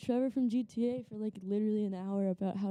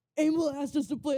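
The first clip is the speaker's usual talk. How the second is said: thrilled, can't-wait excitement, pitched up; 5 semitones higher, 4 dB louder than usual. Retelling an excited friend's FaceTime call: imitating Ellie, excited. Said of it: "Ellie gets really excited".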